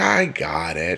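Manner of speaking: snide, sarcastic tone. Retelling how she answered the speaker, imitating a sarcastic reply. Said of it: "and then the sarcasm".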